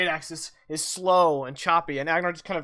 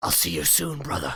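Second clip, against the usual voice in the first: gurgling, bubbling, dying-sounding words. A storyteller voices a wounded foe speaking to a player's character, gurgling. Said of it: "he just kind of like gurgles and says".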